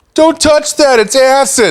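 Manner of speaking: very high, weird, loud yelled outburst. Imagining what Steve Zahn would say as the friar: weird, loud friar line. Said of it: "say something weird, loud".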